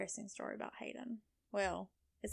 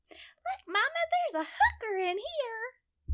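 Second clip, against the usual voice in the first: put-on itty-bitty, teeny tiny, very high little-girl voice; 7 dB louder than usual. Retelling a child's remark to her mother, imitating a tiny little voice. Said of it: "she had that little itty bitty teeny tiny voice".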